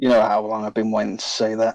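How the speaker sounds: quick, hurried whisper. Voicing a character whispering to a companion named Atreus: quick whisper. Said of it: "quickly whisper to Atreus".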